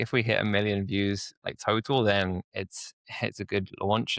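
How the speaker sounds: normal talking voice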